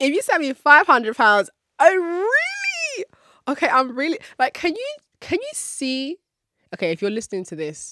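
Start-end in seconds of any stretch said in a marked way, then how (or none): 0.0-6.2 very high, bubbly, giddy, swooping excitement. Talking to listeners who can't see her; high-pitched giddy excitement. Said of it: "how high pitched and excited and giddy my voice is getting".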